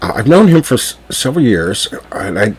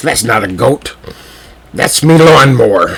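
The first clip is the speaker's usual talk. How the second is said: rough, gruff voice; 3 semitones higher, 4 dB louder than usual. Retelling the hotel owner's reply about his goat, gruff voice. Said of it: "in his gruff voice".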